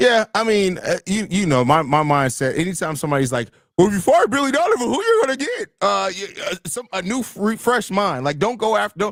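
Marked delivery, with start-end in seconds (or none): 3.8-5.7 annoying, weird, very high-pitched fan voice. Quoting annoying fans asking who the team would hire: weird annoying fan voice. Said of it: "What was,what was that voice?".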